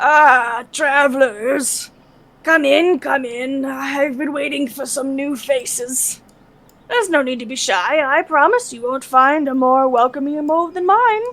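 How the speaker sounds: loud, rough, gravelly voice. Voicing a figure in a cave welcoming travelers: gravelly voice. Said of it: "a gravelly voice echoes from within the cave".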